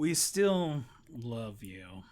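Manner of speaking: put-on slow, openly scornful, contemptuous drawl. Repeating another speaker's line back to them: imitating a contemptuous tone. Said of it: "said with so much contempt in your voice".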